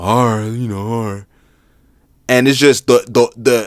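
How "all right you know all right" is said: reluctant, unenthusiastic, grudging tone. Retelling a reluctant agreement to stay after practice: imitating Joel Embiid's reluctant agreement. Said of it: "the quote-unquote enthusiasm that he had behind it".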